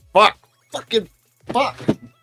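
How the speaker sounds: worked-up, exasperated, very high voice. Reacting to losing the game with a win in hand: frustrated and worked up. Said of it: "let me calm down".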